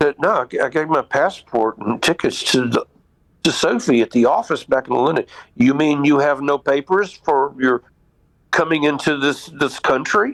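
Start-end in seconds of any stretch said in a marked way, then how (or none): 5.5-10.3 put-on very heavy, hard, strong English accent. Retelling being asked for papers on entering a country, Chuck's hard English accent. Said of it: "very hard, you know, English accent".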